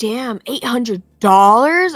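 loud acted delivery. Speaker acts out what a man says too loudly in a store, said loudly. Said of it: "he'll say it loud as fuck".

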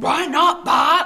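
high cartoon mom voice. Running a scene again, the speaker replies to Bart in Marge voice. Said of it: "I'm doing Marge".

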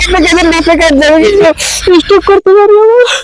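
exaggerated wailing.

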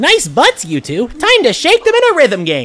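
high character voice, pitch swooping and swinging. Reading a viewer's donation message aloud on stream, in a Monokuma voice. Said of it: "saying with a monokuma voice".

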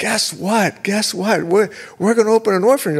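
mock high, loud voice, bursting with excitement. Retelling how his wife ran upstairs with news, imitating excited wife. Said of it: "She's so excited".

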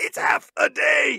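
slow, strangled, choked-out words. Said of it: "Michael Rooker chokes out".

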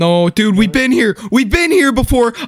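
freaking out. Playing a game with a companion after hearing footsteps that weren't theirs; losing it, panicking. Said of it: "I'm fucking losing it".

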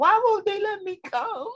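put-on very high, tearful, crying little-child voice. Speaker recalls being kept inside as a child, retelling crying as a child. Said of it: "I'd be looking out the window crying".

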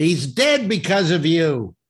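slow, loud, accusing yell.

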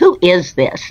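acted brusque, barked, demanding delivery. Retelling a late-night phone call from a woman: imitating a woman barking. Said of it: "the woman barked".

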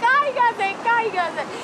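mock yelling, high-pitched shout. Recalling a balance game, retelling her own shouting at another player. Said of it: "Yo le gritaba".

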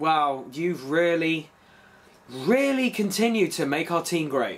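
sarcastic tone of voice. Addressing someone about the trade deadline moves: sarcastic tone. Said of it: "You can sense the sarcasm in my voice".

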